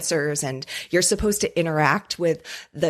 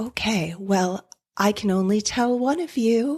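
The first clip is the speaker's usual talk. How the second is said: eerie put-on ghost voice, pitched up; 5 semitones higher than usual. Retelling a spirit's reply to the group, in a spooky spirit voice. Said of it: "speaking in a, a, a spooky voice kind of like this".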